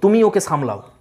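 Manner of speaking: ordinary talk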